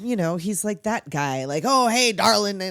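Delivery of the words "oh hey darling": mock loud man voice, louder. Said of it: "and he's loud".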